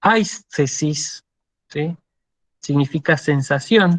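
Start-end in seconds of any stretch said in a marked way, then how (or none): 0.0-1.2 aistesis with the ai syllable stressed. Reading a Greek word aloud: stress on ai in aistesis. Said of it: "Fíjense que yo acentúo sobre la alfa".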